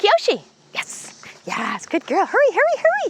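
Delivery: very high, swooping, cheerful coaxing tone. Calling kyoshi to come toward you instead of the distractions, in a happy encouraging tone. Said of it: "I'm using a happy tone of voice".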